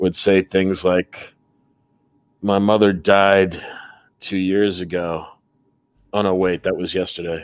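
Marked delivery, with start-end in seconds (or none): 2.4-7.4 bone-dry, flat, monotone deadpan with no inflection. Describing a man he once knew, imitating how he talked: slow monotone voice. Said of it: "talked in this monotone, really slow".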